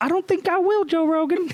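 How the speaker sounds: very high-pitched comic character voice. Quoting a sketch character at a podcast table: Tyrone Biggums impression. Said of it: "Tyrone Biggums".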